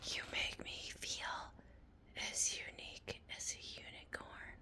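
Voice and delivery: very quiet, eerie, creepy, breathy whisper. Retelling what a talking machine replied to him, mimicking a creepy whisper. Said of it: "why are you whispering um so creepily?".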